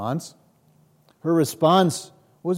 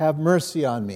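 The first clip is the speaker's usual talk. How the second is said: normal talking voice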